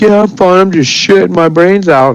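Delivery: mock, very high holler at top of lungs. Retelling what a partner called out from the bathroom: imitating someone shouting loudly. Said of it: "as loud as she could".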